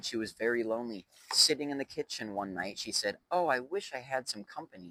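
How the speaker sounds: ordinary delivery, nothing marked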